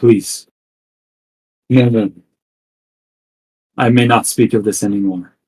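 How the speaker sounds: sheepish, pained, almost hurting tone. Narrator voicing a character who nods sheepishly about the curse, almost in pain. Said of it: "almost in pain".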